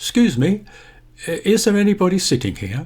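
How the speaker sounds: pitch rising toward and on the word here. Asking whether anybody is sitting in a seat, rising intonation ending on here. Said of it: "you notice how I raise the intonation of my voice to ask this question".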